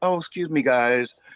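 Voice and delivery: put-on, courteous, mannerly polite tone. Contrasting how the other speaker did not talk to the group: mock polite request. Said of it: "it wasn't like a polite".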